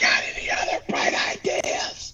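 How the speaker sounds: quiet whisper under the breath. Voicing a character who whispers to a companion: whispering. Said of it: "Seth whispers to Hyan".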